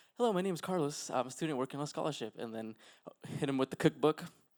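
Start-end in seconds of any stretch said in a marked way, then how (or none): 0.2-2.4 courteous, polite customer-service voice. Retelling greeting a tired older man who opened up: customer service voice. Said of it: "with my customer service voice".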